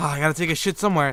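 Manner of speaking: usual speaking voice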